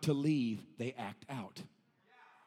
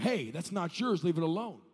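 normal talking voice

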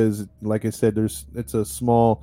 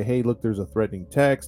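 ordinary talk

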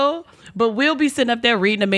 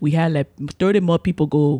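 low, put-on East African accent; 6 semitones lower than usual. Retelling what his boss says on weekly calls, imitating the boss's accent. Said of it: "he sounds like the last king of Scotland, the way you're doing his accent".

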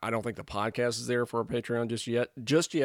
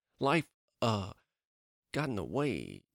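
swooping all over, deliberately bad actor voice; 3 dB quieter than usual. Describing the podcast's delay: worst Jeff Goldblum impression. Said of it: "my very worst Jeff Goldblum impression".

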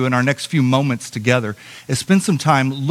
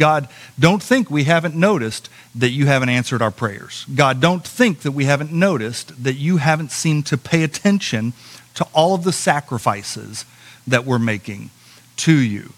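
ordinary talk, nothing marked

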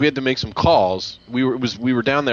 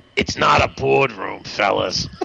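slow, creaky, drawn-out woman's drawl. Retelling what a woman said to them on the bench: imitating Roz from Monsters, Inc. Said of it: "You sound like the lady from Monsters, Inc".

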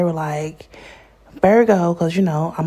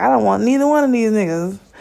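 tearful, distressed, upset crying outburst; 3 semitones higher than usual. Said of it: "just crying, just upset".

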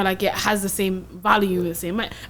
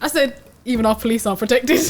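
ordinary delivery

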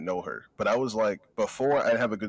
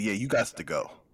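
put-on flamboyant delivery. Retelling a friend's uncle telling them to leave, imitating a flamboyant delivery. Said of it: "he said it really flamboyant".

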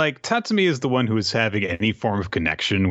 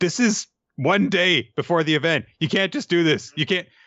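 high-pitched, protesting, complaining voice. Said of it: "one teacher who just moves up their performance and is like".

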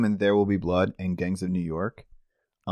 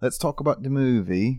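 affected, put-on British accent; 4 semitones higher than usual. Podcast co-host steering the talk to the movie, in a fake british accent. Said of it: "Why are we talking in a British accent".

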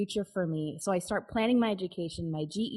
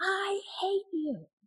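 very high scream at the top of the lungs; 12 semitones higher than usual. Retelling shoving her and yelling at her, retelling a scream. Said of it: "I scream at the top of my lungs".

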